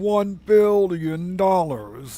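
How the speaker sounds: hammy film-villain voice. Speaker jokes while going through a list, in a Doctor Evil voice. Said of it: "in my Doctor Evil voice".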